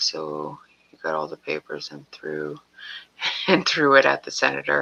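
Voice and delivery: talking broken up by laughs. Describing to the listener what they did, laughing while talking. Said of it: "I'm laughing because".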